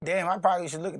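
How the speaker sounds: ordinary delivery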